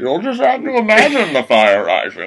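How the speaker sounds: swooping, animated put-on voice, wide pitch swings, laid on. Joking about a movie coming to DVD: Bane voice. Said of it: "I love doing the Bane voice".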